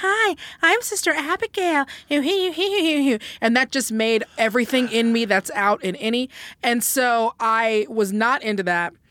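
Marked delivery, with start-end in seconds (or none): 0.0-1.9 high, cheap, bad-comic girly voice. Imagining a performer in makeup and wig, Sister Abigail girl voice. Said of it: "doing a quote unquote girl voice like the one that all bad comics do".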